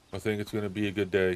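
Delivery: flat, level, one-tone monotone with no inflection. Showing how they'll talk from now on: flat, one-tone delivery. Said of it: "This is how I'm going to talk from now on. One tone. No inflection".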